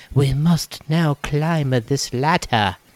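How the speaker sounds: put-on woman's voice. Telling a story about a date, the speaker quotes her, imitating his date's voice. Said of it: "Is that how she sounded?".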